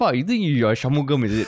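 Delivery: plain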